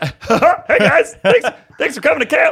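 booming, very high, very loud, drawn-out voice. After saying Eric is away in space, the speaker does an Eric impression. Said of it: "I was about to do my Eric impression".

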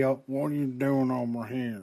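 talking out of the corner of the mouth. Imitating an actor in a trailer: talking out of the corner of his mouth. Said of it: "he's gonna be talking like".

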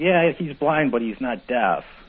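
mock loud calling out. Retelling a partner's answer to clients: imitating partner saying it loudly. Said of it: "And he'd go real loud".

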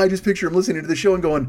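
ordinary talk, nothing marked

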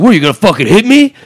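loud, high-pitched, hollered outburst. Retelling how a stranger crossing the street yelled: imitating a stranger yelling. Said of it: "he starts yelling at me".

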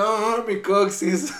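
loud, put-on cartoon grandfather outcry. Retelling a Rugrats scene where the grandfather falls: imitating Grandpa Pickles from Rugrats. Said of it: "el abuelo Pickles se cayó, y es como de".

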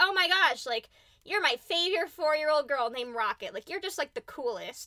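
ordinary talk

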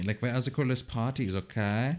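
put-on wild German party-boy voice. Showing off his characters, the speaker does a crazy german party boy. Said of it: "I'm like the crazy party boy from Germany".

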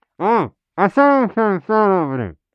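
smothered, muffled, hard-to-make-out words. Asked what he is doing, a character answers: muffled through thick scarf. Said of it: "I can't tell what you're saying through that super thick scarf".

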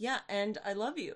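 put-on flat, emotionless robotic voice. Imitating a character confessing love: emotionless Ben imitation. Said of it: "this robot, emotionless".

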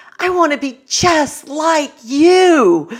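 very high, swooping, put-on gushing, "you" drawn long. Speaker retells what a young woman said to Mrs. Elliot at a conference, imitating enthusiasm. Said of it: "she enthusiastically says".

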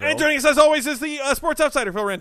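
rushed, very fast, very high and loud. Introducing the Sports Outsider on the show, speaking very quickly. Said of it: "You said that very quickly".

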